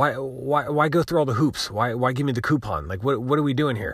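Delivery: very frustrated, exasperated, fed-up venting rant. Speaker complaining to viewers about an e-commerce site, very frustrated. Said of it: "As you can tell, I'm very frustrated".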